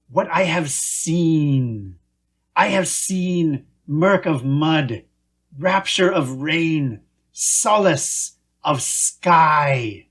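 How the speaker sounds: slow, hissed, theatrical creature voice. A creature drifting on a log continues its speech: hissing creature voice. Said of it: "The creature hissed more loudly, / The creature hissed more loudly, crescendoing toward a dramatic climax. "I have seen shitheels burning rubber off the coast of [name]. All I've seen, all I've known".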